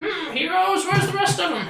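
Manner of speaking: put-on very high, old fairy grandmother voice. Narrating a game, voicing the grandmother fairy meeting the heroes, grandmother fairy voice. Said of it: "And the grandmother fairy says".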